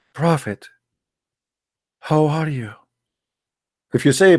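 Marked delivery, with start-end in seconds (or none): 0.1-2.7 hushed, humble, soft, lowered, subdued voice. Demonstrating how one must address the messenger, in a lowered, subdued voice. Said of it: "You have to speak like this".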